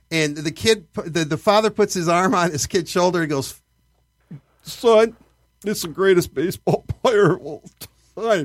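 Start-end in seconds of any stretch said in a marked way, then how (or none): 4.6-8.4 choked-up, tearful, barely getting the words out. Retelling a father's words to his son at a book signing: imitating a choked-up father. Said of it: "he can barely get it out".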